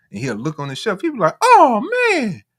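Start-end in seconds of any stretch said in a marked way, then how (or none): 1.4-2.3 very high, very loud, drawn-out disappointed "oh". Retelling a man finding the shelf empty, imitating his high-pitched voice. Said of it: "and he got a high pitched voice".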